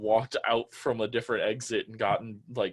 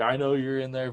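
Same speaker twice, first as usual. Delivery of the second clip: acted-out yelling; 3 semitones higher, 3 dB louder than usual. Retelling how a man with a gun came out shouting at the van, retelling his yell. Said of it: "he's just yelling".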